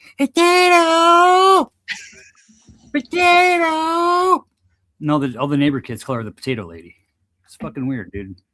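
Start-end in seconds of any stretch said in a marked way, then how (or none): 0.2-4.5 shrill, drawn-out scream. Showing how a neighbor lady screams for her dog: imitating a neighbor screaming potato. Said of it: "she'll stand on her porch and she'll go".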